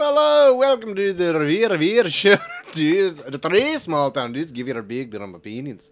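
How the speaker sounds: rough, put-on Scottish accent. Opening the show in an attempted Scottish accent. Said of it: "Is that Scottish?".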